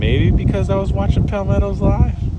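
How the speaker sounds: high, sly, coy teasing lilt.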